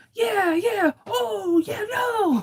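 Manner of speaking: very high, shouted, frantic mock panic. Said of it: "it was like".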